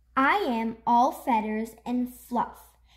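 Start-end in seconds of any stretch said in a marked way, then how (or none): none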